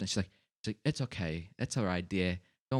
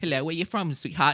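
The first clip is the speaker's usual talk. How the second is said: raised, high put-on English accent on every word; 8 semitones higher, 6 dB louder than usual. Retelling what a stripper said on meeting him: imitating an english accent. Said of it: "with a fucking English accent".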